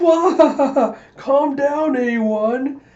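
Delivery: mock laughing jeer, very high, very slow, loud. Retelling a scene where Vegan mocks her: imitating Vegan laughing while talking. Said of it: "He's just laughing like".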